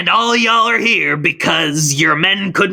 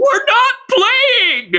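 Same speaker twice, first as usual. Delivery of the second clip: shrill, very high, raised outburst. An employee answers the manager Mr. Sumulong in a raised voice. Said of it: "Don't you raise your voice to me".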